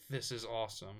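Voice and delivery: ordinary talk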